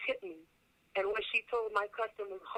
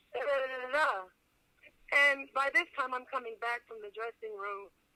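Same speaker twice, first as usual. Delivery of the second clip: ordinary talk, nothing marked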